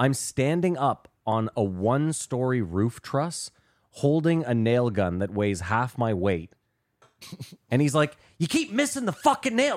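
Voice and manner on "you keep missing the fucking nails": play-acted, shrill, very high-pitched yelling. Retelling a roofing job where the boss kept correcting him: imitating someone yelling. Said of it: "he's yelling at me".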